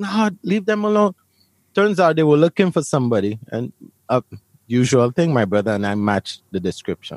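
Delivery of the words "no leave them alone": put-on high-pitched screaming cry. Retelling how everyone reacted during a police search: imitating people screaming. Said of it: "everyone is screaming, like".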